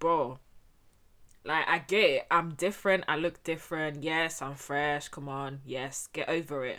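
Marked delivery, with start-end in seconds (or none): none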